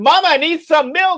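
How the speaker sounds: shrill, very loud hollering yell. Imagining a convenience clerk calling out in a store: mock yell of a clerk. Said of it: "the convenience clerk yells out".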